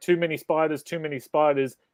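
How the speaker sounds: usual speaking voice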